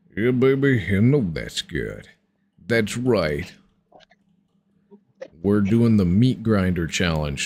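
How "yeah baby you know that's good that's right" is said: deep, cool-guy man voice, dropped low. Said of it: "my cool man deep voice".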